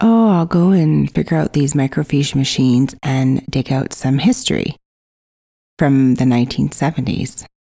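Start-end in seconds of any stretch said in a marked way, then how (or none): none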